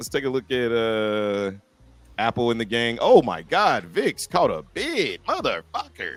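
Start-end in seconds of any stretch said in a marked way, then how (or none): 3.0-6.2 animated, swooping, sing-song exclamatory delivery. Exclaiming while checking the vix: cadence like a Wild 'N Out cast member. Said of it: "You sounded like, uh, what, what's that chick from Wild 'N Out?".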